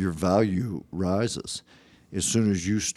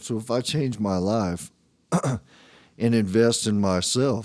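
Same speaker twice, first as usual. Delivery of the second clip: voice breaking and cracking on the words; 3 semitones higher than usual. Talking about changing your life, mid-sentence: voice cracking. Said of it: "my voice cracked".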